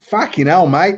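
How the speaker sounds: bad put-on Australian accent. Quoting a man's reply to an offer, in a really bad australian accent. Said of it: "excuse my really bad Australian accent".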